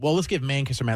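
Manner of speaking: normal talking voice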